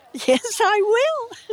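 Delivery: very high, eager, excited exclamation. Asked to show the narrator the way, he answers excitedly. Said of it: "he said excitedly".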